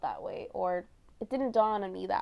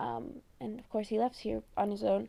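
usual speaking voice

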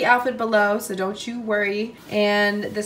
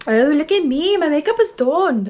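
put-on Irish accent, pitched up; 6 semitones higher, 4 dB louder than usual. Vlogging after doing makeup, suddenly talking in an Irish accent. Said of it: "Why am I in an Irish accent?".

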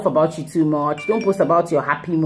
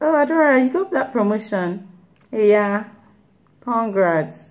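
acted, half-hearted, unenthusiastic delivery, pitched up; 5 semitones higher than usual. Imitating a friend congratulating on a promotion: imitating an unenthusiastic friend. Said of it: "so tell the lack of enthusiasm in their voice".

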